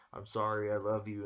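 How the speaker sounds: ordinary delivery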